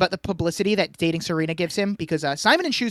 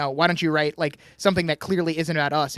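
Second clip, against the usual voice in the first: normal talking voice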